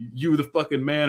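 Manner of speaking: light, hyped-up, excited cheering. Retelling what a player yelled into a microphone: imitating someone yelling.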